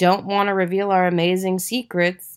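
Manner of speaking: ordinary delivery, nothing marked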